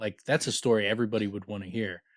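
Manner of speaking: normal talking voice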